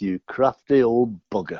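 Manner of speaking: put-on muttered whisper under breath. Retelling signing a contract, whispering under breath. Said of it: "I whispered under my breath".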